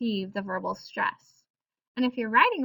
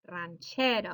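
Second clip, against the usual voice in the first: ranchero with stress on second-to-last syllable che; 4 semitones lower, 5 dB quieter than usual. Explaining Spanish word stress on the second-to-last syllable: stress on 'che' in ranchero. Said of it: "second to last syllable is getting that stress".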